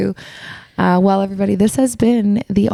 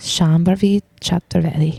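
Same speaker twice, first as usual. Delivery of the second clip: exaggerated Italian pronunciation; 3 semitones lower than usual. Asked to say a name again so the host can hear it; too Italian-sounding pronunciation. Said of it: "Too Italian".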